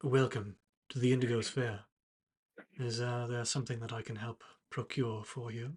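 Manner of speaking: gentle, hushed, soft-spoken voice. A figure at the back of the Indigo's Fair greets visitors, quiet voice. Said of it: "a quiet voice from the back of the room".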